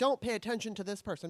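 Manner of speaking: ordinary delivery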